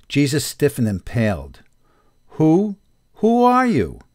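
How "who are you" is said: very high, shaken, stammering voice. Jesus asks Judas, who calls himself a messenger, who he is, stammering. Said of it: "the anointed one stammered".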